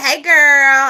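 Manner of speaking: exaggerated, laid-on, put-on valley girl accent. Retelling a greeting between friends, in a Valley girl voice. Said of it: "in my Valley voice".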